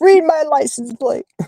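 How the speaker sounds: mock screaming, high-pitched.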